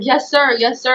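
mock upset, tearful, sobbing voice. Retelling answering a man screaming orders at them, imitating own past crying. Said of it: "And I'm crying and I'm so upset".

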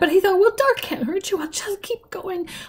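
feeble, weak, shaky, trembly, high-pitched voice. He tells his story, speaking in a fast, weak, trembly voice. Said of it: "He spoke in a fast, weak, trembly voice".

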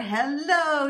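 bubbling-over, gushing, effusive. Bursting through the door to nurse a sick woman back to health, gushing. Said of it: "she gushed".

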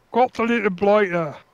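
bad, terrible put-on Australian accent. After catching a pufferfish, putting on a bad Australian accent. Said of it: "That was a terrible Australian accent".

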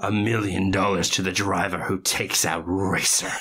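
put-on venomous villain voice. Recapping Speed Racer, voicing the villain's announcement in a mock-venomous Royalton voice. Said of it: "all the vile venom and rancor in his Javert-ass voice".

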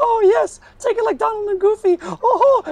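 very high-pitched, slow, squeaky voice. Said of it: "speaking of the Mickey and Minnie voice".

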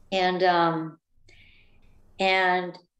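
usual speaking voice

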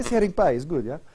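put-on light Ukrainian accent. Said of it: "that's my Ukrainian accent".

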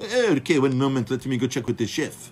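put-on French waiter's accent. Retelling how he replied after being warned about soy oil, imitating a French accent. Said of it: "His French accent".

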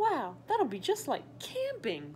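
eager, bouncy, excited, swooping exclamation. Gregory replies to his dad, excited. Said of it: "Gregory said excitedly".

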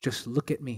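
very soft, hushed, still, small voice. Recalling the answer to their prayer about quieting the mind, still, small voice. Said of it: "that polite, still, small voice spoke".

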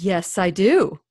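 put-on proud voice. Retelling a conversation, the speaker does a man's mock-proud reply. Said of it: "he said very proudly".

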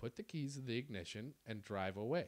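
very calm, low, steady voice. Recounting being pulled at in a car, retelling a calm command. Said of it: "I just very calmly say to Craig".

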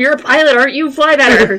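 high-pitched, loud screaming. Voicing a character screaming at the pilot: screaming at someone. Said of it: "start screaming at her".

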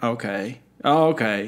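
put-on underwhelmed, unimpressed delivery. Imitating the other speaker's reaction to a bad joke: imitating an unimpressed reaction. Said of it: "I actually don't know if you would have done a courtesy laugh or if you would have done".

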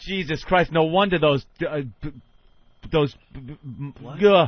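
loud, slow, tongue-tied stammer, words breaking off. Reacting after the others laugh, stumbling over words. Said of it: "You sound like him".

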